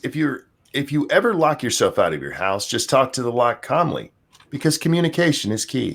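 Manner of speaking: ordinary talk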